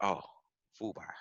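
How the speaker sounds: soft, breathed-out, sudden dawning realization. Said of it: "He's like".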